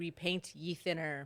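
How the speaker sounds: ordinary delivery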